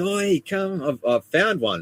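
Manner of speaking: play-acted, very high, shrill, screamed call-out. Recounting finding a python and calling out to the boys; retelling a scream. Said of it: "screamed out to the boys".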